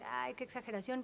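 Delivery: ordinary talk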